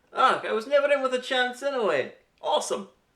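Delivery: put-on awful Scottish accent, high, shrill and loud. Quoting a character's reaction to being turned down: bad Scottish accent. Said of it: "You have the worst Scottish accent".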